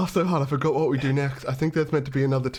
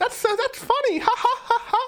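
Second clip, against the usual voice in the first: very high, squeaky giggly laugh. Showing the other speaker what their real laugh sounds like: Elmo-like laugh. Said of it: "My real laugh is that Elmo thing".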